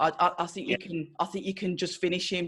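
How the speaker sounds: normal talking voice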